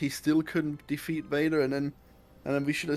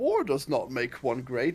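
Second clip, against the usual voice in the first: lecturing tone with big, swooping pitch; 2 semitones lower than usual. Complaining about Yoda and imitating Yoda. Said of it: "Yoda is the worst one of them. He's like".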